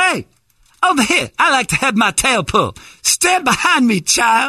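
goofy zebra voice, very high pitch. Offering to do the voices, the speaker talks as the zebra in a put-on zebra voice. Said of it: "I'll do the voices, too".

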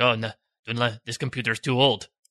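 put-on quiet muttering. Imagining what Saeed says while fixing the computer: muttering under his breath as Saeed. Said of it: "under his breath he's like".

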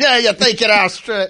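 Australian accent drifting Irish. Voicing Australian birds slapping a pigeon around: attempted Australian accent, came out Irish. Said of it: "that was, uh, Irish".

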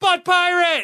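sudden, abrupt yell.

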